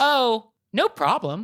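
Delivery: put-on clueless, oblivious, unbothered tone. Speaker quotes a woman's reply to their offer: imitating an oblivious tone. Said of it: "she says in a tone which is like, I don't get it at all".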